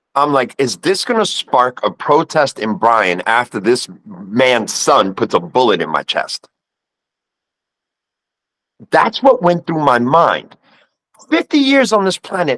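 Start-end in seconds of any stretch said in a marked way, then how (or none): none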